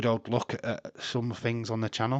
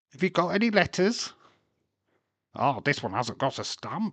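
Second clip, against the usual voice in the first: creepy, deranged, demented evil puppet or toy voice; 4 semitones higher than usual. Describing a talking santa letters puppet, imitating its demented evil voice. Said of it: "it goes all demented and evil".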